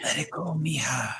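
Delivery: put-on whispery breathy voice. Retelling a disembodied voice recorded at the house: imitating a whispery breathy voice. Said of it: "Really whispery and breathy".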